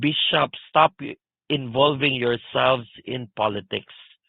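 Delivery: ordinary delivery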